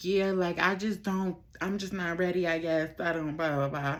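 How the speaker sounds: put-on sobbing, crying through the words. Retelling what was said to a man while sobbing: imitating own sobbing. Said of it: "still, like, sobbing, kinda".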